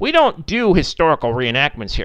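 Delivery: ordinary delivery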